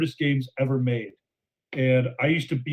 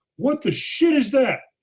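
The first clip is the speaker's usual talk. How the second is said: shrill, sudden, very high blurted yell, acted out; 11 semitones higher, 4 dB louder than usual. Retelling how he yelled after running out of time: imitating someone yelling. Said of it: "and he just yells".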